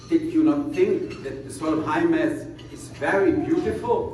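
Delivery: ordinary talk, nothing marked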